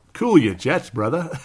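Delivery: rough, overdone, bad put-on Australian accent. Quoting what a Warriors fan said, in an Aussie accent. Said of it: "You could just hear the Aussie accent in that".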